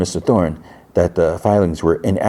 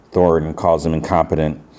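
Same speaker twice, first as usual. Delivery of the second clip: usual speaking voice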